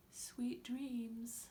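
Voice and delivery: soft, hushed half-whisper, bedtime-story style. Showing children how to read a bedtime story aloud, in a half-whispery bedtime voice. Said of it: "A whispery voice for a bedtime story".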